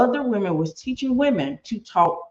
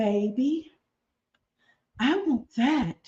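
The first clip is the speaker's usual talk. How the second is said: put-on very slow, drawn-out baby talk voice; 4 semitones higher, 4 dB quieter than usual. Giving an example of what that sounded like, in a childlike baby voice. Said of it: "let me see if I can give you an example of what that sounded like".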